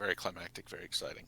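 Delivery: expressionless, level, flat deadpan monotone. Recapping past events to co-hosts: deadpan monotone. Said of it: "in his like deadpan monotone voice".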